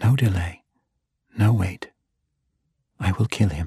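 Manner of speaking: speaking as if to herself. Looking down at Neverwinter beside Drist, she speaks as if to herself. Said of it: "as if she was speaking to herself".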